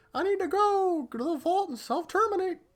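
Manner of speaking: very high little cartoon mouse voice. Recapping a show, the speaker voices the character Penny in a Mickey Mouse voice. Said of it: "I don't know why I gave her a Mickey Mouse voice".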